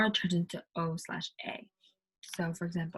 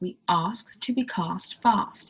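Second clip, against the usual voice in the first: very slow British accent, a-sounds rounded toward o. Example sentence showing a turning into o: british accent. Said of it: "because of A turning everything into O, it would be more like".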